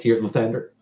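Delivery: muttering under the breath. Showing how the character corrects a name: muttering under the breath. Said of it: "I say Lathander underneath my breath".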